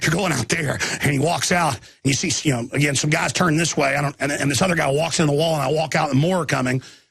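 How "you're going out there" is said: put-on excited guard voice. Retelling what a security guard said, imitating an excited guard. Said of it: "he was really excited".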